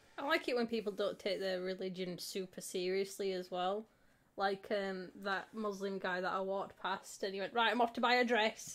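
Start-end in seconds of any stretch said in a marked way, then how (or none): 7.6-8.8 put-on Yorkshire accent. Retelling what a man the speaker walked past said: imitating a yorkshire accent. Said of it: "came out with his Yorkshire accent".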